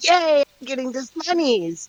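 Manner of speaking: tiny, very high squeaky voice. Voicing a halfling cheering from the corner: little tiny voice. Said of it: "a little tiny voice in the corner goes".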